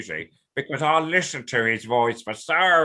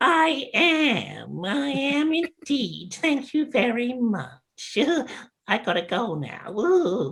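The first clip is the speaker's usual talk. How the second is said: very high put-on character voice, "am" drawn out; 13 semitones higher than usual. Showing off another type of character voice in a little exchange, put-on character voice. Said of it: "That's another type of, you know, character, voice".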